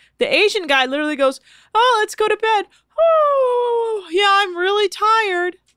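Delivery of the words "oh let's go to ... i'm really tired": very high, drawn-out, phony show of sleepiness. Mocking a guest's fake display of being tired: imitating a fake tired guest. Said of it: "weird fake display of everyone being, in quotes, tired".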